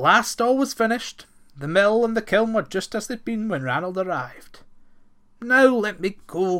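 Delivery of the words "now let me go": loud, drawn-out groaning voice. A captive brownie, having finished the work, begs to be released, groaning. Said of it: "groaned the brownie".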